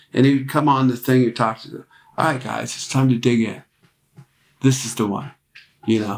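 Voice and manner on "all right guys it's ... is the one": put-on gentle, encouraging voice. Imitating Mike telling the band through headphones to dig in: imitating Mike's gentle voice. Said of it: "this kind of voice and a way about him, very gentle".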